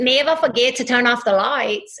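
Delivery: put-on Australian-accented voice. Imitating a smart house's voice assistant: australian accent. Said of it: "the girl has an Australian accent".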